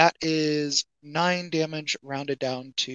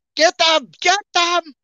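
very loud, high-pitched shout; 11 dB louder than usual. Voicing a man who calls on others to attack: shouting. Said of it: "as he shouts".

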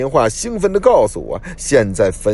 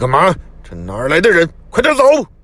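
harsh, stern, sharp voice with rising pitch; 7 semitones higher than usual. Grabbing a companion who wants to get out of the car: said sharply. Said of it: "厉声道".

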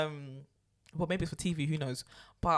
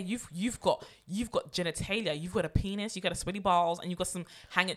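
ordinary talk, nothing marked

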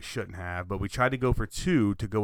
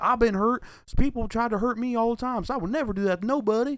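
put-on backwoods Kentucky accent, pitched very high; 14 semitones higher, 4 dB louder than usual. Retelling an interview by the player Cash Daniels: rural Kentucky accent. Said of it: "he just sounds like he walked straight from the trailer park in, in the Kentuckies".

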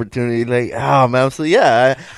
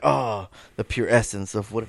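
put-on cool delivery, lower and quieter; 3 semitones lower, 9 dB quieter than usual. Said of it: "he sounded cool as fuck".

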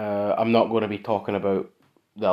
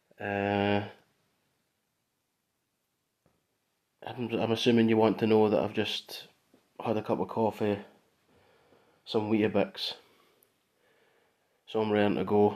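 hushed voice, quieter and slower; 3 dB quieter than usual. Speaker talking alone, not wanting to disturb the upstairs neighbour, keeping voice down. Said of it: "I need to keep my voice down a little bit for this".

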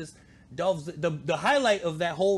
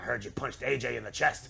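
low, rough, creaky, rasping voice; 6 semitones lower, 3 dB quieter than usual. Retelling what the boss said to a wrestler: Vince McMahon voice. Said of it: "while we're making the Vince McMahon voice".

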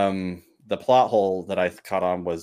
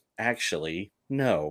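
put-on heavy sarcasm, much quieter; 5 dB quieter than usual. Retelling how a man answered his landlady on the stairs, retelling a very sarcastic reply. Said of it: "like saying it very sarcastic".

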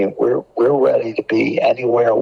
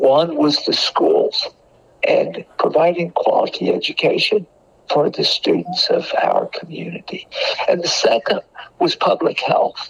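deeply emotional speech, pitched up; 8 semitones higher than usual. Speaking about Dr. Rogers' passion, the speaker is emotional. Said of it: "I get I get emotional about it".

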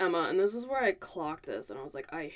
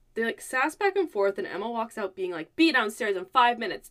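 usual speaking voice

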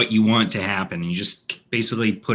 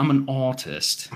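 posh English accent, raised pitch; 6 semitones higher than usual. Trying out the word just discussed, in an English accent.

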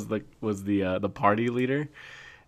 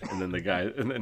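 usual speaking voice

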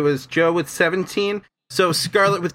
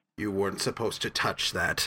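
much deeper, hushed creature hag voice; 8 semitones lower, 10 dB quieter than usual. Narrator voicing the hag after it turns to look at the players, significantly deeper hag voice. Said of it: "a significantly deeper voice just say".

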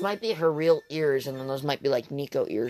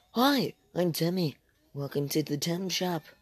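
put-on voice, much quieter; 6 dB quieter than usual.

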